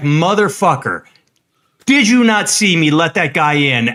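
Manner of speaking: mock-furious, acted-out angry outburst. Retelling what the speaker said to a driver with brights on; retelling an angry outburst. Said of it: "I was so pissed".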